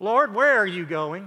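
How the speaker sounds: mock whining voice. The speaker repeats Peter's words to the Lord once more; imitating whiny Peter. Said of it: "you almost have to hear it in a whiny voice".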